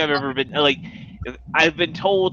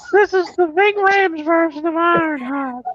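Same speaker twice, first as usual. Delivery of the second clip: put-on high old-man voice. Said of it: "Herbert from Family Guy".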